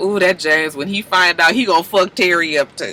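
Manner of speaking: ordinary delivery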